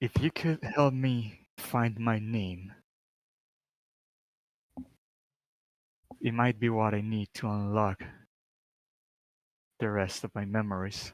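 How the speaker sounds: ghostly character voice. Answering a player's question in character as the ghost: voicing a ghost. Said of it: "the ghost would answer".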